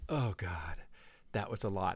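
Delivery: mock heavy, drawn-out sigh, very quiet. Retelling a tense moment with one of the kids: retelling a huge laborious sigh. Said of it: "a huge, laborious sigh of".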